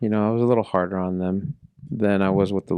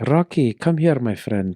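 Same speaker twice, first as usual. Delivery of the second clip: put-on welcoming, European-accented voice; 4 semitones higher than usual. Telling of getting to know Charlie, the speaker imitates Charlie's European accent. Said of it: "so he's got an accent".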